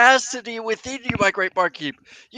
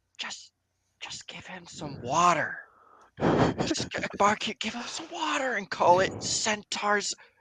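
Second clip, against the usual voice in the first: whispered aside, quieter; 2 semitones lower, 6 dB quieter than usual. Slipping the barkeep a gold piece in character: whispering to the barkeep. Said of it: "I wanna whisper to the barkeep and go".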